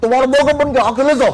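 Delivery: put-on yelling. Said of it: "typical Bengali, फुल चीखते हुए".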